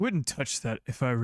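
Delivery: put-on towering figure voice. Voicing a towering figure who warns a player from behind: Aenolf's voice. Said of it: "a towering figure standing behind you who says".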